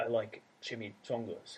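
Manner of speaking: put-on serious, flat Irish accent. Imitating a serious actor reading comic lines: deadpan Liam Neeson impression. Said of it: "picturing him with his Irish accent and no jokes".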